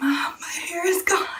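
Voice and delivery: frantic, rushed, freaked-out panicked blurt. Retelling waking mom after finding hair gone: imitating own past panic. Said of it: "I'm, like, freaking out".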